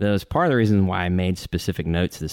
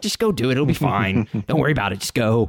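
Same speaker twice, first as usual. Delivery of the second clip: higher, fed-up, exasperated parental tone; 5 semitones higher than usual. Describing a scene where he tells someone to hide in the closet, mock-exasperated parent voice. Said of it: "he almost sounds like an exasperated parent".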